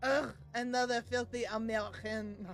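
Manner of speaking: terrible, really bad, slow fake French accent. Voicing a cat answering a person who asked to pet it: bad French accent. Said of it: "Really bad French accent".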